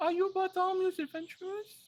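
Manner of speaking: very high, squeaky, tiny bunny voice. Narrator voicing a tiny bipedal bunny peeking out at the adventurers: tiny bunny creature voice. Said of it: "a little tiny bipedal like bunny kind of pokes his head out and he goes".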